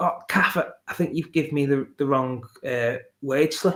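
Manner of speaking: put-on stuttering, stammered words. Speaker retells what they stammered to her at work; retelling own stuttering. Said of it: "sort of been stuttering".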